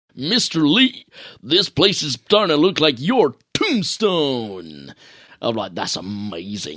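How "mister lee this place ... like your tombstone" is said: over-the-top, hammy, swooping American voice acting. Quoting a line from an early video game, in over-the-top American voice acting. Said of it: "really over the top American".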